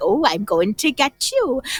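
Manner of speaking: slow, spooky, menacing monster voice, taunting. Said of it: "creepy way with their arms outstretched".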